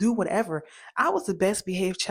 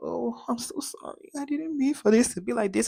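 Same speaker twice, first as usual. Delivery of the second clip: mock weepy, tearful, crying voice; 4 semitones higher than usual. Retelling how family react when finally confronted: imitating someone crying. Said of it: "they want to start crying tears like".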